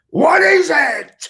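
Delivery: sudden, very high, shrill whirling yell. Retelling how a stage partner whirled around mid-scene: imitating someone yelling. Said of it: "he whirled on me and yelled".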